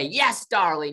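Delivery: screamed out, pitched high. Retelling a pitch meeting's reaction: screaming in the Lee Daniels way. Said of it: "screaming in the Lee Daniels way".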